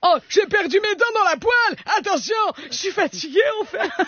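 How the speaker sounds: put-on little old granny voice. Making a tortilla for her children, the speaker switches to an old woman voice. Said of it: "prends une canne, fais la vieille".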